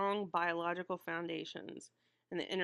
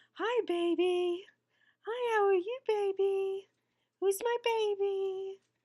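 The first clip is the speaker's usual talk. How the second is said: put-on very high, drawn-out baby talk, stretched; 14 semitones higher, 7 dB louder than usual. Speaker demonstrates how they still talk to their dogs, in high-pitched baby talk. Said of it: "language spoken in a higher pitch than normal".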